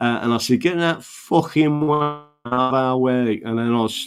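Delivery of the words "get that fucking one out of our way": put-on slow, near-perfect Yorkshire accent. Retelling a line said while driving with friends: imitating own Yorkshire accent. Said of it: "this almost perfect Yorkshire accent".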